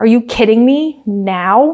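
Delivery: put-on exasperated tone. Recapping a race where a driver is told on the radio to swap, mock-exasperated as Yuki. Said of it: "he was like not happy".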